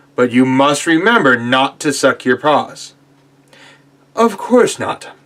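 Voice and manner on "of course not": high-pitched, thoroughly shocked tone. Narrator reads the bear answering Peter, in a very shocked voice. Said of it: "said the bear in a very shocked voice".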